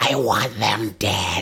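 very slow, loud, drawn-out spirit shriek. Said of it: "as he screams".

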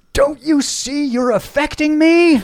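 very high, very loud, drawn-out scream. Retelling what a driver screamed out his window in traffic: retelling a scream.

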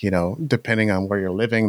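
plain

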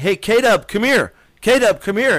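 high, shouted calling yell. Retelling how someone called out from the staging area, retelling a yell. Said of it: "he's yelling".

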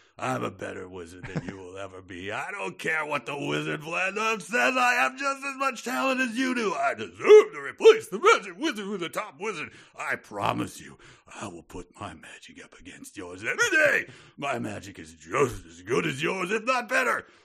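furious yelling, high and swooping. A furious wizard apprentice yells at another wizard; Al Pacino-style furious rant. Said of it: "I'll go a little way trying to do it as Al Pacino".

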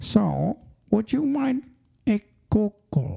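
high comic voice swooping upward. Joking with a co-speaker, saying a word in Dr. Evil voice. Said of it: "I like saying it like that, like Dr. Evil".

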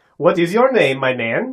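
Scandinavian-accented speech. Co-reader shows how the farmer's question should sound, in a Scandinavian accent. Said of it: "Scandinavian accent".

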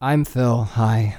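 put-on very sad tone. Introducing himself on the last day of the podcast: put-on very sad tone. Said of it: "I'm talking in a very sad tone".

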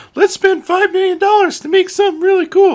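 very high-pitched cartoon mouse voice. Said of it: "did that voice like Mickey".

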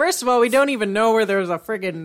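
normal talking voice

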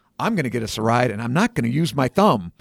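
ordinary talk

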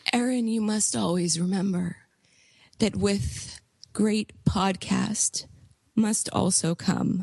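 put-on broken, weak, faltering whisper. Retelling a dying man's last words to the speaker, in a broken whisper. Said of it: "He whispered in a broken voice".

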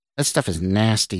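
ordinary delivery

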